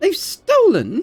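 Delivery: hissed words. Voicing a woman's reply in a tabletop scene, hissing. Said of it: "She hisses".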